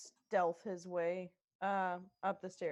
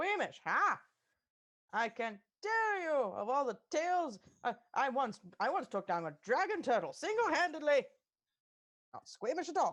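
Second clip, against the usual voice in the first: high, swooping vintage radio announcer voice; 6 semitones higher, 4 dB louder than usual. Speaking in character about past deeds: old-timey radio host voice. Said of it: "two of our party members sound like old-timey radio hosts".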